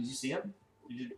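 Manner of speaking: soft, hushed half-whisper. Voicing a character half-whispering back to another in a game: half-whispering in character. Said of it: "I'll whisper back".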